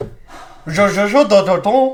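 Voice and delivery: very slow, loud put-on French gibberish. Signing off the show in fake french: fake french gibberish. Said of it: "that was fake French".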